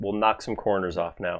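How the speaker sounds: usual speaking voice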